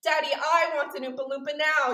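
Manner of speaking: high, loud, bratty voice. Retelling a line from a movie, imitating a bratty girl: imitating Veruca's bratty voice. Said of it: "I can't do the voice quite".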